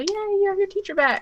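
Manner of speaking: bright happy cheering. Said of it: "check back in with the child and go".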